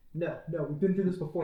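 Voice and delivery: ordinary talk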